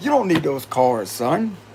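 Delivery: pure charm, gentle, persuasive, winning delivery. Retelling what God tells the speaker about reading cards: charmingly voicing God. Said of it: "In a very charming manner".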